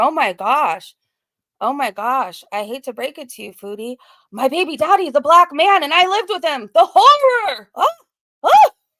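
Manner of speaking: horrified, shocked voice, acted, loud and rising. Retelling how someone reacted, imitating a shocked voice. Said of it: "the shock in her voice".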